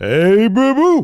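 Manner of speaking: high, loud, cartoonish voice. Ranking old cartoons, doing a Yogi Bear impression. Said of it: "That's where I get my Damian Priest impression".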